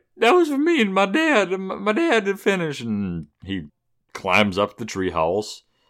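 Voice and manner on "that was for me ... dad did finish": very high-pitched, tearful crying voice. Retelling a film scene, quoting Tommy upset about his treehouse: imitating Tommy crying. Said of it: "he's crying".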